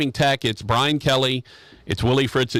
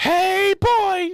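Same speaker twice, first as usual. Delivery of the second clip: very high, hoarse, squeaky cartoon mouse voice. Show Rogers what she sounds like: [name] as hoarse Mickey Mouse. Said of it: "sounds like Mickey Mouse after a 3-day bender".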